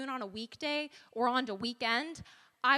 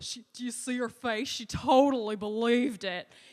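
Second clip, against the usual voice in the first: loud, odd, weird frat guy way of talking; 6 dB louder than usual. Imitating guys she dated talking once home, a weird impression of a date. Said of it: "that was a weird impression".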